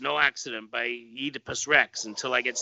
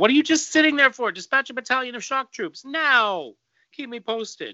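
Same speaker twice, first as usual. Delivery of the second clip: shrill, very high commander-style shouting; 11 semitones higher, 3 dB louder than usual. Reading a comic aloud, the boss orders shock troops: yelling at the turtle. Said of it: "he yells at the turtle".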